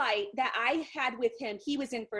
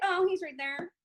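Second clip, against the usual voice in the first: casual, offhand, nonchalant tone, pitched up; 5 semitones higher than usual. Retelling how a girl pointed out Jordan by the terminal, imitating her nonchalant tone. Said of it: "so nonchalantly".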